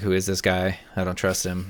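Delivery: normal talking voice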